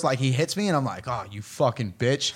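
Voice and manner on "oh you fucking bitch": muttered under the breath, much lower pitch. Retelling what you muttered when he hit you, under your breath. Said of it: "Under my breath".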